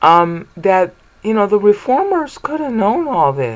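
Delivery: voice breaking mid-phrase. Speaker explaining a point while sick, voice cracking. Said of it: "Sorry about my voice cracking".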